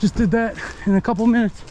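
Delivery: breathless, winded, out of breath. After stomping on a brush pile, the speaker is out of breath. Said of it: "I'm out of breath".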